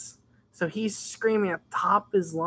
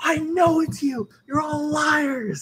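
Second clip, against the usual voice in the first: put-on very high, furious, angry screaming yell; 9 semitones higher, 3 dB louder than usual. Retelling the screaming teacher calling the class liars: imitating a screaming teacher. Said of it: "And he's like".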